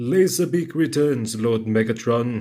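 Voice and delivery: slow, deliberate, put-on character voice. Recalling a movie scene, quoting a character's line in Shockwave voice. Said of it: "I'll stop doing that voice impression".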